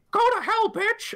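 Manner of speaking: very high cartoon voice. Voicing a character who sends an enemy to hell: Mickey Mouse voice. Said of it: "Mister Kitty sounds exactly like Mickey Mouse".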